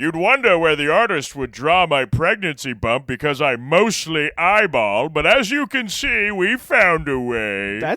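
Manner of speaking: high, loud, slow, drawn-out cartoon voice. Speaking as Plankton about a pregnancy bump: Plankton voice. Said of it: "really good Plankton".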